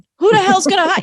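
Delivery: mock sarcastic inner voice. Voicing a sarcastic inner critic doubting a coaching career: imitating a sarcastic inner critic. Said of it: "I have a very kind of sarcastic inner critic".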